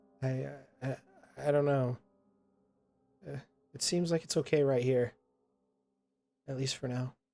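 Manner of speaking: unsure, hesitant, faltering, halting words. Voicing a character answering an invitation to come along: hesitant. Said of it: "She kind of hesitates".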